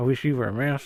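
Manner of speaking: mock muttered aside. Retelling a scene, quoting Basil's reply: muttering under breath as Basil. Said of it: "under his breath says".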